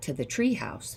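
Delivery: ordinary delivery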